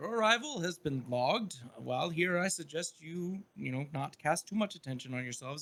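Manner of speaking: put-on kindly old man, quiet authority. A narrator voices an old man looking up from a ledger, friendly old man voice. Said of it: "old man friendly kind of smile".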